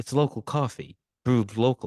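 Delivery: mellow, calm, soothing dad voice. Retelling what Tweak's dad says in the coffee shop: imitating a calming voice. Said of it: "has this, like, calming voice".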